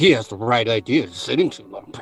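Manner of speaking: sassy, muttered under the breath. Repeating what he said, the speaker imitates him muttering under his breath. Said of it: "under his breath".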